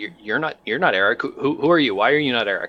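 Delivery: startled, taken aback, stammering over words. Voicing a researcher who is startled by a stranger's voice: startled. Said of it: "is startled by the new voice".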